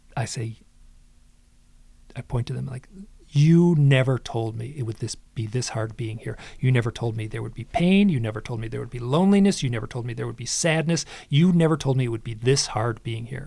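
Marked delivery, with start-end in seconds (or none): none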